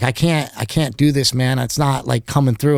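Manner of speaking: plain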